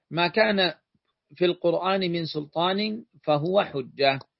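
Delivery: ordinary talk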